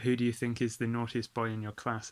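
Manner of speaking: ordinary talk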